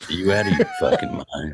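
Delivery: low, swooping film-star delivery with wide pitch swings. Echoing a quoted film line: Jack Nicholson voice. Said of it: "I do Nicholson".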